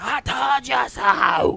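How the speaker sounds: shrill, very loud, high, raspy screaming yell. Someone predicting how Goldberg will start Raw, in a raspy screaming Goldberg impression. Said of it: "he's going to get in that raspy voice".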